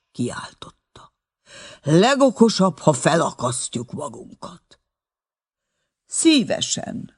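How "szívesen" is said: lofty, patronizing, condescending, very high-pitched voice. The director answers the panicking porter, condescending. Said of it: "mondta az igazgató még mindig fölényesen".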